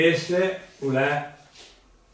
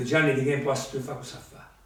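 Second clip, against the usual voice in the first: plain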